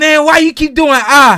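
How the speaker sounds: shrieking, very high and very loud yell. Retelling what someone once yelled at the speaker: imitating someone yelling. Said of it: "he yelled".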